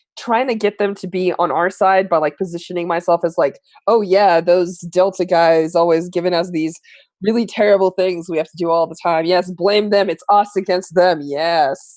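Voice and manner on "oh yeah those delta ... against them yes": ordinary delivery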